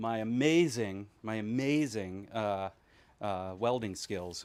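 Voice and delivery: heavily sarcastic, very slow drawl. Describing one's own skills: sarcastic. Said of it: "it was meant to be very sarcastic".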